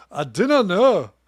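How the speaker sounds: put-on Scottish accent on three words, pitched high. Doing the only scottish accent they have, as the other speaker points out. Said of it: "Why is that the only Scottish accent you do?".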